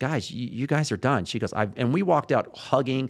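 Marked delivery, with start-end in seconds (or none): 0.0-1.2 put-on mock crying, much higher. Retelling what the woman running their sessions told the couple, imitating someone crying. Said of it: "she started crying".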